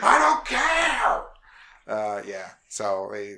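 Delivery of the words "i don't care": very high, loud yelling, "care" stretched long. Imitating a boss yelling at the team: imitating Todd Howard yelling. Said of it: "he's just yelling at the team".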